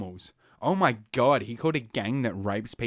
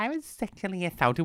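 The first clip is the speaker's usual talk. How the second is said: put-on valley girl voice, pitched higher; 8 semitones higher than usual. Mocking a witness's testimony: Christine Blasey Ford in Valley Girl voice. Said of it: "horseshit put on Valley Girl voice".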